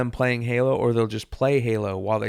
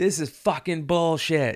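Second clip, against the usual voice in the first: mock screaming, pitched higher; 5 semitones higher than usual. Describing a man in line with them, the speaker imitates him screaming. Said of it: "He's just screaming at him every fucking two minutes".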